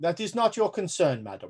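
unyielding, intractable put-on German accent. Voicing a german cook who answers a guest: intractable german character. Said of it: "He's playing up the intractable German for you".

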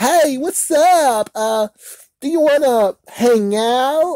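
put-on very high teen girl voice. Retelling how a woman suddenly sounded, in a stereotypical teenage girl voice. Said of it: "she sounds like a freaking damn stereotypical girl, teenage girl".

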